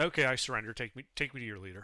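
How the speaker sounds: dry, expressionless, completely flat deadpan monotone. Turning to another character in the game to surrender, completely deadpan. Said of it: "completely deadpan be like".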